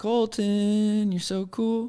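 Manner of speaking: put-on child accent, very high pitch, very slow. Imitating how another speaker's teasing line sounded: imitating a put-on child accent. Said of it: "This is what I heard".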